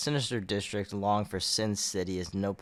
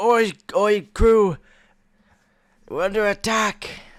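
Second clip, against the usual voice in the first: very high, loud, drawn-out put-on Scottish fisherman accent; 13 semitones higher, 12 dB louder than usual. Quoting the other speaker's old fisherman line back to him, in a Scottish fisherman accent. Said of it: "I know that was like a Scottish accent".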